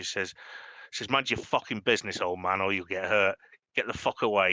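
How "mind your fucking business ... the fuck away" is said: menacing, threatening thug voice. Voicing a fella egging on a brawl, warning an old man: threatening thug. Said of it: "this fella who's egging them on sees you".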